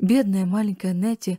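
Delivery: plain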